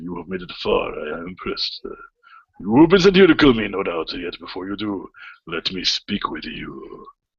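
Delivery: acted samurai warrior voice. Storyteller voices a man addressing those who just entered: samurai voice. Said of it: "let's do a samurai voice".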